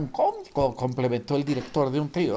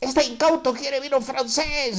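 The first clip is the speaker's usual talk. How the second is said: very high yell while dying of laughter; 11 semitones higher than usual. The waiter mocks the diner who ordered French wine: shouting, laughing hard. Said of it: "gritó el mesero muerto de risa".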